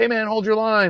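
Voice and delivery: high shout. Retelling what another rider yells during the race: imitating someone yelling. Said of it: "he yells like".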